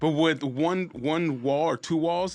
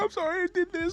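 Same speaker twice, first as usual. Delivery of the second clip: mock crying, very high, tearful, weepy voice; 3 dB quieter than usual. Retelling how he called his lady afterwards: imitating someone crying. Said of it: "calls his lady crying".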